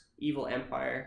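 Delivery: plain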